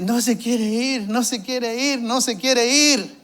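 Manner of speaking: mock sobbing. Recalling a woman who spoke to him while crying, imitating her desperate crying. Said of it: "en un acto ya así llorando, desesperada".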